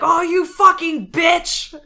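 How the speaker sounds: shrill, very high, loud screeching scream. Retelling screaming at people while playing Pictionary: imitating own screaming. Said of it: "I'm just like screaming things like".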